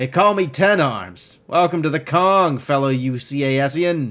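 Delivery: put-on loose Midwestern accent, words running together and piling up. Reading a story aloud, voicing a character's cheerful shouted greeting, loose midwestern accent. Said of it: "his words piling together in a loose Midwestern accent".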